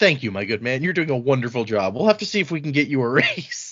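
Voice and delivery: mock patronizing, smug, condescending pat-on-the-head tone. Retelling a character thanking a guard for opening the gates: imitating a condescending tone. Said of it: "this is so condescending that it's amazing".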